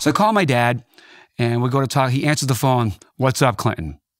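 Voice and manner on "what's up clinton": put-on uneasy, troubled, off-sounding voice. Retelling a father answering the phone: imitating a troubled-sounding dad. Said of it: "that's "Something's wrong with my dad" voice".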